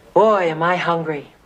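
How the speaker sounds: acting cool. Coaching someone on how to get a date, demonstrating a line in a real cool voice. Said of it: "say in a real cool voice".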